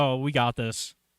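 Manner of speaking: plain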